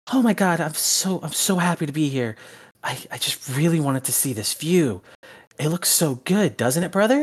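put-on bubbly girl voice, high, super excited chatter. Voicing a character speaking to her brother, super excited girl. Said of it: "super fucking excited".

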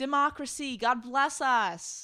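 heavy sarcasm. Summarizing brutal crackdowns on dissidents, then commenting: sarcastic. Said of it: "That was sarcastic".

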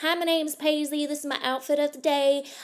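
attempted American accent. Doing an outfit-of-the-day introduction in an imitated American accent. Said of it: "I will suddenly just start talking in my best American accent".

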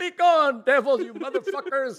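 loud, high-pitched hollering. Retelling chasing off something upstairs with a crucifix: imitating own past yell. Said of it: "I yelled at him".

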